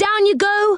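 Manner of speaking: very high, urgent calling out. Reading a story: Joe cries to Silky, Beth and Franny, crying out. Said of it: "cried Joe to Silky".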